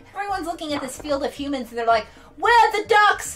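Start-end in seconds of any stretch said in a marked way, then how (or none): 2.4-3.4 put-on Australian accent, pitched very high and loud. Voicing the crowd watching a cricket game, in an attempted australian accent. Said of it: "I shouldn't try an Australian accent".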